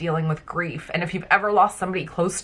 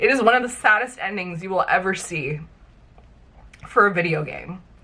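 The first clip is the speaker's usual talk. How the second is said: speaking through tears, teary crying voice. Talking about a video game's sad ending, crying while speaking. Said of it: "I'm actually crying".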